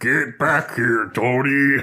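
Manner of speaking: slow, booming, big, loud bellow. Recalling a suited character calling after Tony, imitating a wall-busting voice. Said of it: "he sounds like he should be busting through a wall".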